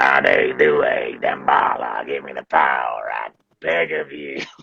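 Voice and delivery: very low, slow, begging goblin voice. Showing the goblin from a game played with friends, Dorf the goblin voice. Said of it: "he's a goblin, and he talks like this".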